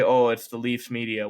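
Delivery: plain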